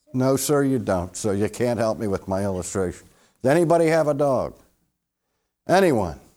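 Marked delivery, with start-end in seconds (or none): none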